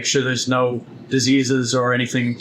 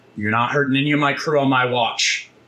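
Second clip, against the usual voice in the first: stern, angry, firm rebuking tone. A game master, as Kropesh, answers a player's character, angry. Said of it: "angrily and says".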